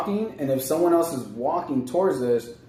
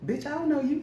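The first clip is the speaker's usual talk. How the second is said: put-on high, soft baby voice; 11 semitones higher, 7 dB quieter than usual. Voicing a shy baby's imagined thoughts toward a stranger at the store: voicing the baby's inner dialogue.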